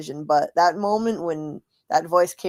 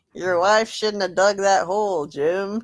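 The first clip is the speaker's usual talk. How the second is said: put-on American southern accent; 3 semitones higher than usual. Imitating how a voice they heard sounded, southern accent. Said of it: "it sounded southern".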